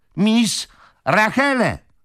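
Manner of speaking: high, loud shout at full cry. Joe to the old lady, who asked him to speak louder: shouted. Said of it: "Krzyknął pyzaty chłopiec".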